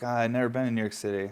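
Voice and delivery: ordinary talk, nothing marked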